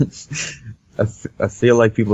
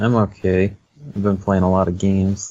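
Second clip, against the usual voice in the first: bored, zero enthusiasm, flat monotone. Answering the host's question of how you are: unenthused, flat tone. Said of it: "you sound really enthused".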